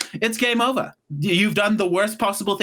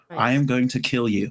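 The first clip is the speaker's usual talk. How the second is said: mock cool, composed, low, calm villain menace; 6 semitones lower than usual. Retelling what she said to a man; retelling a calm threat. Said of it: "And I did it calmly".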